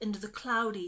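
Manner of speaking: plain reading voice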